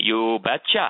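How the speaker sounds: put-on broad Norwegian accent, laid on thick. Asked for permission to marry his daughter, the father answers, in Mr. Freitag's thick Norwegian accent. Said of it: "in his thick Norwegian accent".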